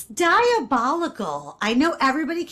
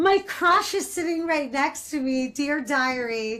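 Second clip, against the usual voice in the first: ordinary delivery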